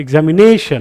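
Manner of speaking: na of examination said loud, long and high. Showing the stressed syllable in examination: louder, longer, higher na. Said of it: "ने ... थोड़ा louder किया, थोड़ा सा longer किया, ... higher कर दिया".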